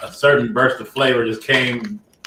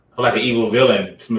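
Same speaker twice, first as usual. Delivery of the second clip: ordinary delivery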